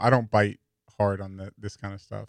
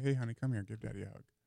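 very hushed, soft, soothing, gentle coaxing tone; 12 dB quieter than usual. Retelling calming a crying, screaming Jolie: retelling talking softly. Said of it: "I talk to her soft and say".

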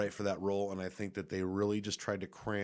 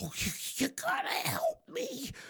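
high, whispered, whiny, whimpering put-on voice. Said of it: "He's such a whiny little bitch".

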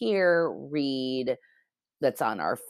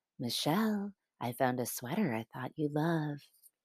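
soft, hushed, machine-like robotic half-whisper; 8 dB quieter than usual. Reading aloud a smart speaker's line to its owner: gentle robotic half-whisper. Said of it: "in a gentle robotic whisper".

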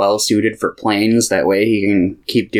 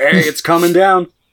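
loud high-pitched yell; 8 semitones higher than usual. Imitating a plane voiced by Dane Cook: loud Dane Cook plane. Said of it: "It's just really loud".

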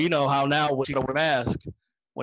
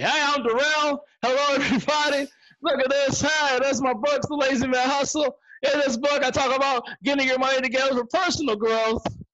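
high, loud, flat, lifeless, personality-free delivery; 11 semitones higher than usual. Retelling own first try at motivational speaking: imitating own past loud flat delivery. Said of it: "I was more loud, but no personality".

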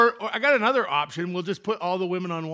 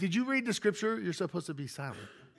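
playful teasing, much quieter; 3 semitones higher, 9 dB quieter than usual. Speaker addresses Veronica in the front row, teasing. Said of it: "I'm just teasing".

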